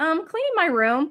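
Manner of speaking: offhand, casual tone. Retelling his answer when asked about the trash bags: imitating a nonchalant tone. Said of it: "like, nonchalant".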